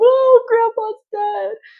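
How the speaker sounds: high, loud, slow mock wallowing wail. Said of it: "wallowing in it".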